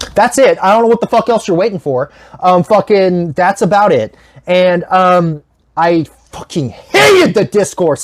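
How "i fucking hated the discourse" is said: getting heated, angry rant with swooping pitch. Complaining about the online discourse around the movie, getting a little angry. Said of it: "I'm actually getting a little angry".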